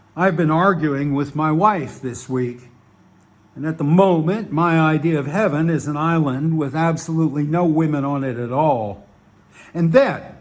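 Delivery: plain reading voice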